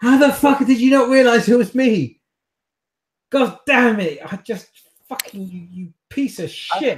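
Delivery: shrill, very high, furious screaming tirade. Voicing a character who screams at the players for not recognizing her: screaming and shouting in character. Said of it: "again screams and shouts at you".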